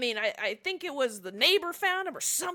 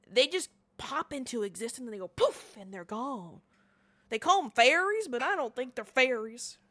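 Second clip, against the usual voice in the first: put-on drunk man voice. Voicing a really drunk, red-faced guy at the bar: drunk man voice. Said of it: "You can tell he's really drunk".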